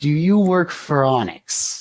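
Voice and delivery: very slow, drawn-out hissed delivery. Voicing figures who turn to the three and ask together: hissing. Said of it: "they hiss out".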